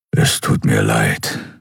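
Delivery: very deep, rough, slow, rumbling murmur. He strokes the weeping girl's hair with his paw and grumbles. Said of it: "brummte er".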